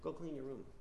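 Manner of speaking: gentle, very quiet, soft voice. Showing a request that gets ignored because it is soft: soft, gentle. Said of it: "when you say it softly, you go like this".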